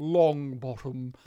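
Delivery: dry, droll delivery. Describing how an actor says a name in a movie, in an Alan Rickman droll voice. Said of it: "when you hear Alan Rickman say in that droll voice of his".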